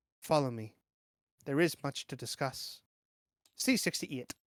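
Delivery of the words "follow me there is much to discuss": soft, gentle, calming, soothing voice. Reading a character's line aloud from an adventure book, in a soft, soothing voice. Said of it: "She tells you in a soft, soothing voice".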